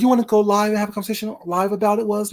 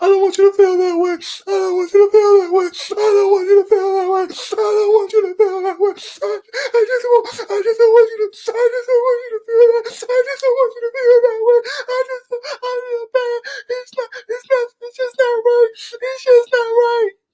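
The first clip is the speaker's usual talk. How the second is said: mock very high, weepy crying voice; 14 semitones higher than usual. Speaker acts out a girl's crying apology; imitating someone crying. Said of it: "Stop crying".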